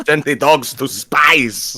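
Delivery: put-on Russian accent. Joking about a dog breed name: Tim Curry Russian accent. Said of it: "the way Tim Curry would say it in the Russian accent he does in Red Alert".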